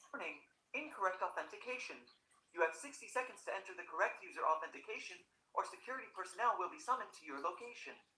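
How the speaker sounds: very quiet robotic automated-system voice. Recording a take for a computer voice track, speaker reads the warning in computer voice. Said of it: "Computer voice".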